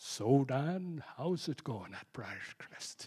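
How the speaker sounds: put-on Irish accent of a man. Retelling how a man greeted him every time he came home, Tom's Irish accent. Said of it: "he had a great Irish accent".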